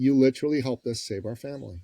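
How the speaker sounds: ordinary talk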